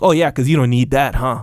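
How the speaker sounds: put-on heavy sarcasm, sounding half-offended. You are retelling what someone said back, imitating someone super sarcastic, almost offended. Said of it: "like super sarcastic, like almost offended".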